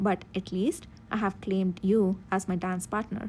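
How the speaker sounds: ordinary delivery, nothing marked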